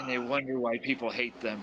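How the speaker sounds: whispering in a put-on voice. Whispering an aside in character to another party member: whispering in character. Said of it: "I'll whisper to Jaimao".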